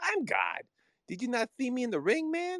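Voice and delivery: very high, lively, swooping, sing-song, boastful voice. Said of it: "my best impersonation of Mike".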